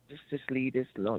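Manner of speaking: ordinary talk, nothing marked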